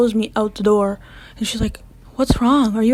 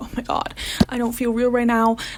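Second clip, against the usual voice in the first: acted panicked voice; 4 dB quieter than usual. Recounting a derealization episode in front of the class, acting out past panic. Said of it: "I was like panicking".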